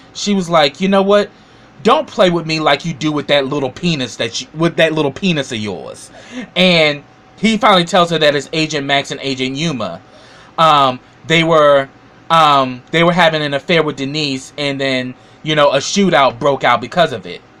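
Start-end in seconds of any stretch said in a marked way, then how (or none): none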